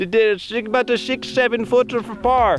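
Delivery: put-on Swedish accent. Asked to repeat another person's remark about a putt in his best swedish accent. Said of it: "in your best Swedish accent".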